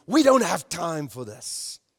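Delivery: annoyed, irritated, impatient, out-of-patience tone. Retelling a mother grabbing her child away from the manger, mock-impatient mother. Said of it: "And she said impatiently".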